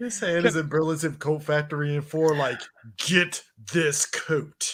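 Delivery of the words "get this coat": put-on British accent. Voicing a character's talking hand shopping for a coat: put-on british accent. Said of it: "Why does your hand speak with a British accent?".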